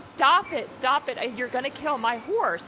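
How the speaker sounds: mock-screaming. Speaker retells rushing over to the people with fireworks: retelling own scream. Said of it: "and I'm just screaming".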